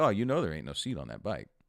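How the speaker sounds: plain, simple, matter-of-fact delivery. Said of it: "he said it in such a matter-of-fact way".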